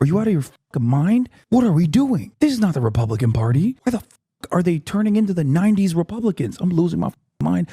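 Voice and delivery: high-pitched scream squeezed into a whisper. Speaker ranting while trying not to wake the neighbor, whisper-scream. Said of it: "I have to whisper scream".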